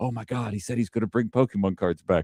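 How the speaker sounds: whispering. Retelling how everyone reacted to a campaign promise: imitating a crowd whispering.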